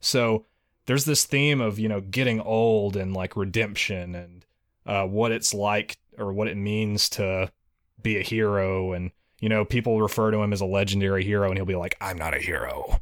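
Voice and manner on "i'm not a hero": low, rough, gravel-laden voice. Imitating the game's hero when people call him a legendary hero: gravelly, rough voice. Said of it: "in his gravelly, rough voice".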